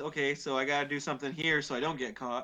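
ordinary talk, nothing marked

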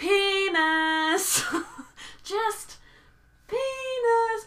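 very high, stretched-out, drawn-out hollering. Retelling yelling at traffic with head pressed against fence bars, retelling a yell. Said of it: "I'm just yelling at traffic".

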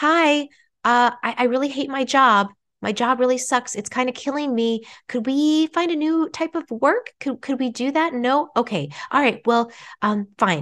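tiny, small, high-pitched little voice. Acting out the little voice inside asking for rest: small little inner voice. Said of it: "what if the little voice is saying".

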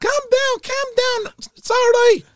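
very high, loud, soothing cooing voice. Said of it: "She was like".

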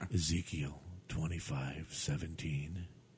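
hushed, very low, quiet, calm delivery. Contrasting a loud actor's delivery, the speaker is imitating Steven's calm delivery. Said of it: "And I'm going to talk like this".

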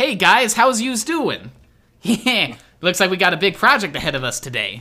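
breezy, casual tone in character. Voicing the shop partner greeting the players: Joey Wheeler voice. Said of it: "He's like".

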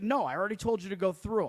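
loud scolding yell. Retelling scanning a boarding pass, imitating the man yelling at them. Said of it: "yelling at me".

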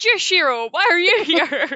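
high, loud, overly casual, cheeky tone. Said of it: "Ichigo's like".

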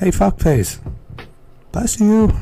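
put-on voice used for a small child. Showing how they would speak to a little kid, talking to a little kid. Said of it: "That's how I would speak to a little kid".

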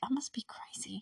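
slow, quiet whispered muttering. Retelling a character talking to herself as she runs away, retelling whispered muttering to herself. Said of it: "she's whispering and muttering to herself".

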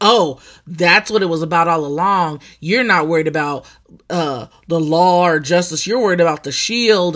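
ordinary talk, nothing marked

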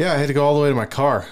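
panting, fast and out of breath.

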